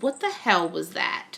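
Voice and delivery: ordinary delivery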